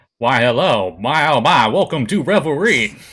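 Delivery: cloud giant character voice. Voicing the cloud giant host welcoming the party: voicing the host of revelry. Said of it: "He's like".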